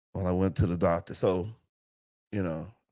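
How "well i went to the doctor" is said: low, dull, lifeless, flat put-on monotone. Joking about ending up unwell and talking in a put-on monotone voice. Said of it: "having one of these monotone voices like".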